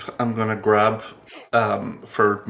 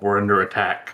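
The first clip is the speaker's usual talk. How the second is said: rough, gruff growling voice. Voicing a character warning others awake: growling. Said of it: "Gerald's gonna growl".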